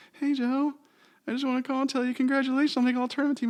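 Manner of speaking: put-on very high, loud little-kid voice. Retelling a landline call from Nick in elementary school, in Nick's little kid voice. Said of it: "in his little kid voice".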